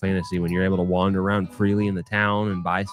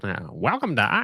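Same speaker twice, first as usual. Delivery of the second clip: mock high-pitched old-time radio announcer voice; 3 semitones higher than usual. Imitating how the other speaker's intro sounded: high-pitched old radio commercial voice. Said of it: "the high-pitched voice that the microphones used to pick up better".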